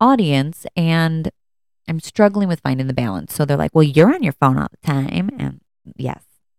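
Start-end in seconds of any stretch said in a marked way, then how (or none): 3.7-5.3 mock-sassy, sassing-back put-on child voice. A parent retells their children talking back, imitating sassy children. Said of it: "that's my impersonation of my children sassing me back".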